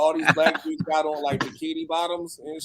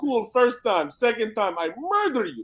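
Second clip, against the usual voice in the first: put-on Polish accent, higher pitch; 6 semitones higher than usual. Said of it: "in this very Polish way of saying".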